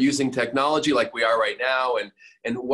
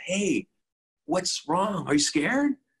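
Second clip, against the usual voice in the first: mock baby talk, pitched up high; 6 semitones higher than usual. Speaker showing how they ask their leaders, talking like to a kid. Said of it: "I say it like that, like I'm talking to a kid".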